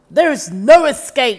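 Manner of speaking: booming, very loud, snarling wolf voice. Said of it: "Wolf snarled".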